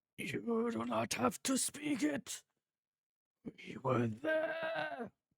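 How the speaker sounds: many unsynced voices in a very high chorus. Voicing a voice heard in the back of a character's head: chorus of many voices. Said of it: "It's a chorus of many sounds, many different voices".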